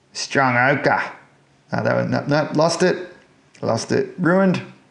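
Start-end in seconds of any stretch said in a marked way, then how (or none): 0.2-1.1 put-on broad Australian accent, louder. Saying a paint color name for the channel in a broad aussie accent. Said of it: "say the paint colors in as broad an Aussie accent as I can".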